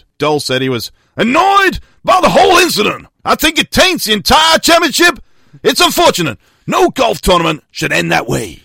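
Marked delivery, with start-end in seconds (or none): 3.2-8.5 clumsy, unconvincing, badly attempted put-on Southern accent. Reading out a golfer's quote from a news story: attempted Southern accent. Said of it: "including my attempted accent".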